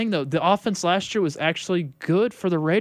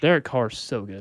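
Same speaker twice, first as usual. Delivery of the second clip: sarcastic, mocking tone, pitched lower; 7 semitones lower than usual. Praising a quarterback while the other speaker notes it: sarcastic. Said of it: "I know you're being sarcastic".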